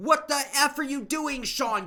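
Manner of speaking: very loud, very high yell. Recalling how he scolded himself in the game, retelling yelling at himself. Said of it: "I'm yelling at".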